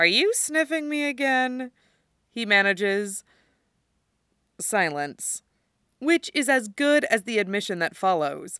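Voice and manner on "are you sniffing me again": words squeezed through silent laughter, pitched up. Tony, with Steve's face pressed into his hair, asks Steve something, laughing while speaking. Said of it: "shaking with silent laughter".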